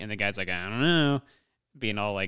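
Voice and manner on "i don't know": mock smug, coy, dismissive tone. Retelling a movie confrontation, imitating someone douchey and coy. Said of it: "being all, like, fucking douchey and coy".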